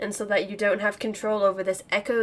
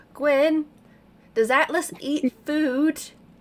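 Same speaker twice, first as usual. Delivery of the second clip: high-pitched calling out; 6 semitones higher, 4 dB louder than usual. Speaker yells a question down the hall to Gwen, yelling down the hall. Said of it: "I'm gonna yell down the hall".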